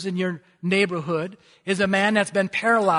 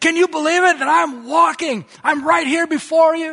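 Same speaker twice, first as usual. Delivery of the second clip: mock excitement, loud and high exclaiming; 10 semitones higher, 6 dB louder than usual. Retelling what a man said on finding he could walk, imitating an excited man. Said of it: "he can see this excitement".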